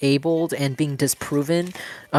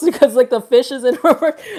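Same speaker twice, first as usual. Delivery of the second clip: giggling through words, higher and louder; 10 semitones higher, 7 dB louder than usual. Reading cards and explaining a funny card: laughing while talking. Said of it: "laughing too, too much".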